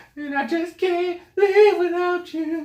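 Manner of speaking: high, slow, distant-sounding wail.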